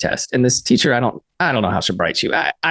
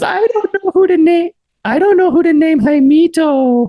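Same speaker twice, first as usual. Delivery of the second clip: very high, loud, shrill teacher voice; 6 dB louder than usual. Retelling what a teacher said on the first day of class: imitating teacher in super high voice. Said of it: "my voice is super high".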